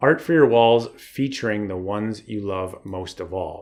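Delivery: normal talking voice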